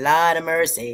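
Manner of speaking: tried-on, put-on fake Jamaican patois accent. Trying out an accent for a listener, speak in a put-on Jamaican patois accent. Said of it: "how was that patois accent right there?".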